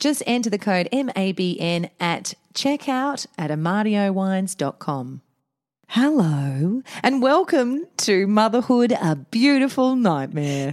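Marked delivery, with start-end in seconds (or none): 5.9-10.7 creepy ad voice, much higher pitch. Opening the podcast, the host greets listeners like the National Tiles ad guy. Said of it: "That was the creepiest hello".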